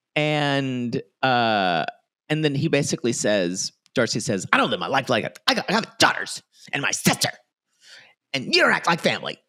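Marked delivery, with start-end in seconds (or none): 4.6-9.4 mock furious, worked-up angry rant, rising as it goes. Retelling an argument from the show in the person's voice: imitating Darcy angrily. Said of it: "we're doing this in their voices".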